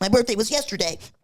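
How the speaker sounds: mock sassy, pointed, high voice. Acting out a woman's reply to a late birthday wish: imitating a sassy woman. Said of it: "I felt like it's very sassy".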